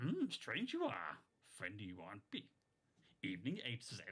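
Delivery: little alien sage voice, sing-song, pitch swooping all over. Doing an impression after a chat reader asks for Yoda: Yoda impression. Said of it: "The best Yoda impression, please, [name]".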